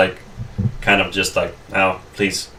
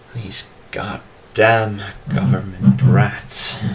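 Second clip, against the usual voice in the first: muttered under breath, to himself. Describing what a man mutters as the listeners leave: muttered under breath. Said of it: "you hear him kind of under his breath saying".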